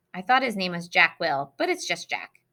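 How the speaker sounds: usual speaking voice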